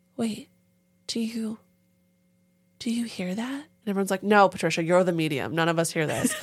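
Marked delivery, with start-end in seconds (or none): 0.2-3.6 gentlest, tiniest, soft hushed voice, slow. Imitating Patricia, the medium who hears the dead, in the softest little voice. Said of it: "She had, like, the softest little voice".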